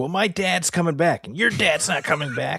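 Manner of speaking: put-on teasing voice.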